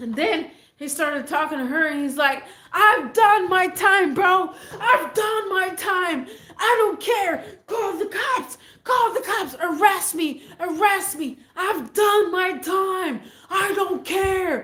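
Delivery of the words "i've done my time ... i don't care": mock defiant ranting yell, loud, high, dragged out. Telling the guys how a man kept screaming at her, retelling a man screaming loudly. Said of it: "he just kept saying that freaking loud".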